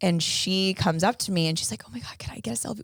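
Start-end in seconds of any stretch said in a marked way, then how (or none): 1.9-2.8 very quiet, very hushed whisper. Speaker retells a fan asking for a selfie, imitating a fan whispering. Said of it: "Whispering because I'm kind of in the back".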